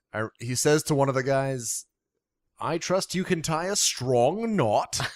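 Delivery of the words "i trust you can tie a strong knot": fake, clumsy English accent, pitched up. Quoting the bearded magician from a film, doing his very bad English accent. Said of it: "doing a very bad English accent".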